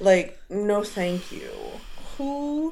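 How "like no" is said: normal talking voice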